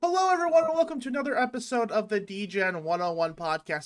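hurried, very fast, rattled off delivery. Podcast host opening a new episode, very fast. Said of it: "I said that really fast".

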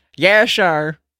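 high, loud, put-on Southern accent. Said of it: "Stop trying to do accents".

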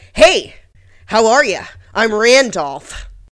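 very loud, very slow, through clenched gritted teeth. Imitating a man greeting someone at a disco, talking through gritted teeth. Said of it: "with his teeth gritted".

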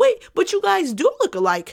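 high, mock clueless voice.

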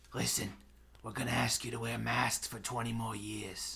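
gritty, gravelly coal-miner voice. Imitating a man who talks like a coal miner: gravelly voice impression. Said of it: "he talks like he's a coal miner. I don't know if you actually heard his voice. He's like this".

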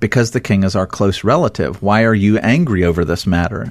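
normal talking voice

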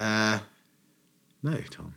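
hesitating. Asked whether he drank at all, a man answers, hesitant. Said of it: "do you hear that hesitation in his voice".

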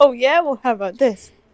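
ordinary talk

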